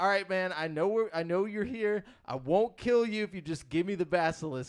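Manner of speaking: re-enacted yell. Recounting a game match, the speaker is retelling own yelling. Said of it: "I'm like yelling".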